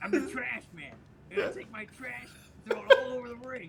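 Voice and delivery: rough, loud, drawn-out bellow. Repeating the quote on request in a Danny DeVito impression. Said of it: "That was a really good spot-on impression".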